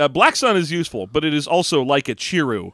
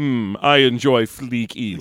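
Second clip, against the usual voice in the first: put-on evil emperor voice, lower; 3 semitones lower than usual. Voicing another character in a group bit, same voice for everyone: Emperor Palpatine voice. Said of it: "you're just giving everybody the same voice".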